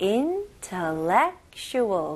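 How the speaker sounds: intellectual said very slowly with clear even rhythm. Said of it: "리듬을 잘 잡아가지고".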